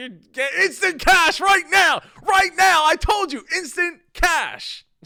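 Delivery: very high, very loud, shrill, booming, barked drill sergeant yell. Praising Andrew's ad read, the speaker imitates him like a drill sergeant yelling. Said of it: "like a drill sergeant yelling".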